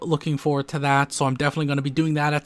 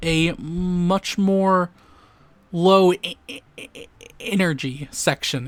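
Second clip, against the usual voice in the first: stumbling repeat on the start of energy; 3 semitones higher than usual. Speaker casually talking in an update video, stuttering. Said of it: "Excuse me for stuttering there".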